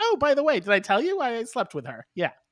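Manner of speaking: play-acted offhand, nonchalant, high sing-song throwaway tone. Retelling what a movie character says to Lou: imitating a nonchalant remark. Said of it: "just nonchalantly just like".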